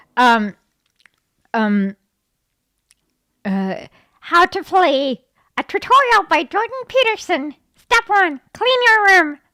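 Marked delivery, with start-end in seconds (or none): 4.2-9.3 high-pitched frog-like impression voice. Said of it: "I can't do his voice though".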